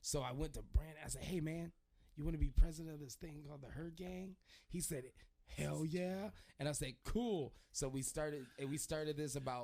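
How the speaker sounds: ordinary talk, nothing marked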